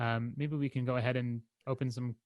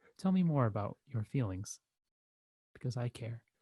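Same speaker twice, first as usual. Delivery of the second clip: gentle, soothing, calming counsellor tone. A therapist showing how he'd talk to listeners over the internet, soothing therapist voice. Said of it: "I will talk to you very soothingly".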